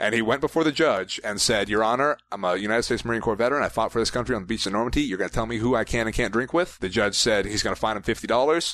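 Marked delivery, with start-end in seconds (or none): none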